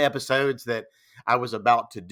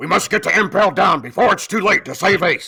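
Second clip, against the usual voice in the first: loud, pitched-up, grand, regal cartoon voice; 7 semitones higher, 6 dB louder than usual. Repeating his line as Jim Bay, in a McGruff the Crime Dog voice. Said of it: "I based all of that vocal on McGruff the Crime Dog".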